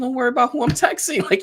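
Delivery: high, fast delivery while laughing.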